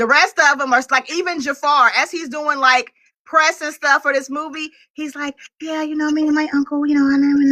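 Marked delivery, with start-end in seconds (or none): 5.6-7.5 put-on soft-spoken voice. Imitating Jafar doing press for the movie: imitating Jafar's soft-spoken voice. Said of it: "all the Jackson children are soft-spoken".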